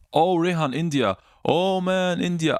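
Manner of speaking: high, loud, excited, delighted cry.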